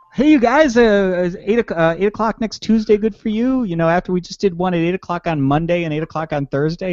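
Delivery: very high, eager dog voice. Reading out a coworker's message in the voice of a Labrador Retriever. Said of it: "read it in the voice of a Labrador Retriever".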